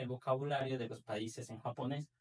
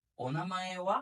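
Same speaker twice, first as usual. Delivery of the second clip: rising pitch on final wa; 4 semitones higher than usual. Explaining a question expression, rising pitch on final wa. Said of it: "al final elevamos wa".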